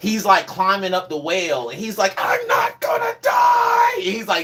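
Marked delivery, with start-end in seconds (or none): 2.2-3.9 put-on very high, drawn-out anime hero yell. Retelling a show scene where the hero climbs a whale: imitating Luffy yelling. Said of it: "yelling, doing his, like, Luffy, like, yells".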